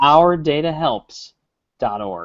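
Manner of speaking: unhurried, slow, deliberate, each part carefully spaced. Asked to repeat the donation web address less fast: slow and deliberate. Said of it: "Don't say it so fast".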